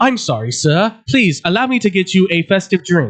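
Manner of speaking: mock-robotic, put-on robot-like voice. Imitating a nice guy apologizing when someone yells at him, mock-robotic voice. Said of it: "His responses are more robotic than that".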